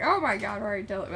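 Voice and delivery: ordinary talk, nothing marked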